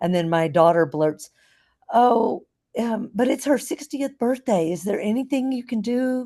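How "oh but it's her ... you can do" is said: small, high, sugar-sweet little voice. Retelling a daughter asking the hotel for late checkout: imitating a sweet little voice. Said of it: "that was her little sweet voice".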